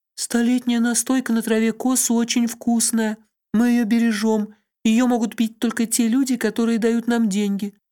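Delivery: shy, abashed, timid, very high voice. A lady setting a jug on the guests' table explains; timid, embarrassed. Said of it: "Она покраснела от смущения и робко объяснила".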